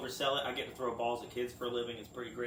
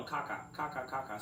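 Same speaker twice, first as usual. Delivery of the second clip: plain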